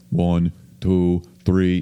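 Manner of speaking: put-on speaking with a New York accent. Imitating someone counting on air, Mike Francesa counting on air. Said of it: "so fucking New York".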